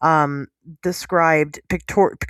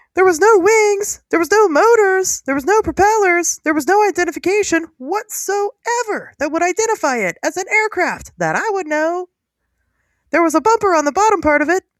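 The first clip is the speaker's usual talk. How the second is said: excited, very high squeaky voice; 14 semitones higher, 4 dB louder than usual. Retelling a man's first-hand account of what he saw, in a Mickey Mouse voice. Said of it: "it kind of sounds like Mickey Mouse".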